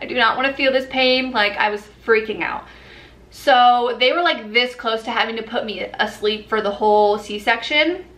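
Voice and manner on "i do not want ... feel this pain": ordinary talk, nothing marked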